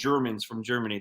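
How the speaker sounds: usual speaking voice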